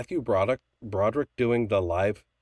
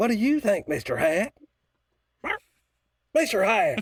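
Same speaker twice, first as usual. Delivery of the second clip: very high cartoon voice with swooping pitch; 12 semitones higher than usual. Doing impressions for the group: Mister Garrison voice. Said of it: "that's a good Mister Garrison".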